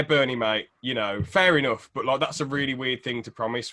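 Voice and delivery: ordinary talk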